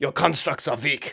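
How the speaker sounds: put-on German accent. Recounting a fight scene, quoting a line in a put-on German accent. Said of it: "in the German voice".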